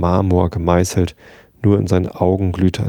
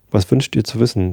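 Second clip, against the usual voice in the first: ordinary delivery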